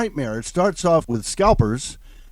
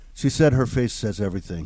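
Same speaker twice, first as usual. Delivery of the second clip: normal talking voice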